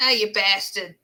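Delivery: put-on, mock Southern US American accent. Asked to talk like an American and make fun of them: put-on Southern American accent. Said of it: "now that's Southern".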